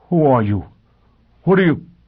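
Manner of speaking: trembling, unsteady, shaking voice, pitched high. Paralyzed before his own image, Foyle takes a breath and asks: shaking voice. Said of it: "spoke in a shaking voice".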